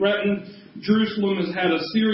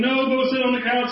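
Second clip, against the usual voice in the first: mild half-yell, pitched up; 5 semitones higher than usual. A parent describes answering a child who shouts, retelling a yell back. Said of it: "I can yell back in response".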